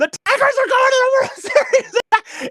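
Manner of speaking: shrill, very high, elated yelling. Retelling running through the park after the win, imitating own past yelling.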